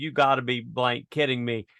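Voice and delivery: ordinary talk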